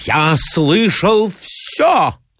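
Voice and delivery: ceremonious, weighty, solemn tone. A man repeats his claim to a woman, solemnly. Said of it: "повторил Мозгликов торжественно".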